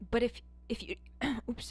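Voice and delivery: choked voice. Explaining patience and putting a foot down, the speaker chokes; choking mid-sentence. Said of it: "I'm choking on myself".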